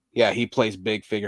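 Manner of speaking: ordinary delivery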